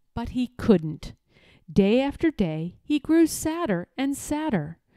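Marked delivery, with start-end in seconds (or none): none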